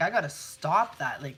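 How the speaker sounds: ordinary talk, nothing marked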